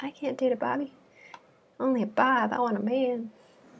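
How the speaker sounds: high fake Southern accent. Imitating what the girlfriends say after a breakup, in a southern accent. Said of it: "why they have to have a Southern accent".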